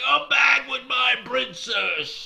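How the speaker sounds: shrill, very loud monster troll shriek. Telling a story about a troll chasing a boat, retelling its screaming. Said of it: "he was screaming out loud".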